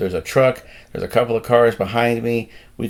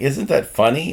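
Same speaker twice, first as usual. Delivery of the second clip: put-on laughing child voice, mocking, higher pitch; 4 semitones higher than usual. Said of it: "and laughs".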